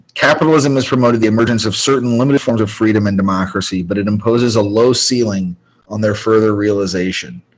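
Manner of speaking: ordinary talk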